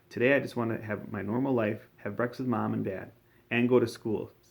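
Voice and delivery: ordinary talk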